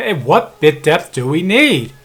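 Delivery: very loud, booming shout. Speaker testing a recording, switching from a regular voice to a loud voice. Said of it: "now I'm going to do a loud voice".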